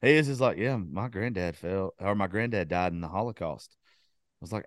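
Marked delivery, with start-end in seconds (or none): 0.6-3.8 low, deadly serious deadpan delivery. Retelling how seriously a friend said his line: imitating a dead serious delivery. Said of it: "was so fucking serious about it".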